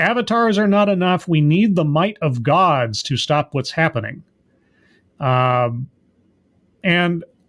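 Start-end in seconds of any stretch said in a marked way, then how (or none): none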